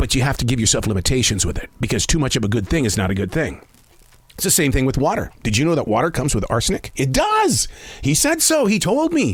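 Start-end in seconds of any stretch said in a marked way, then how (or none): 0.0-3.6 firm, strong, instructive, informative lecturing tone. Retelling what a food expert said about coffee: imitating Robert's strong, informative voice. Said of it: "in his very strong and informative voice".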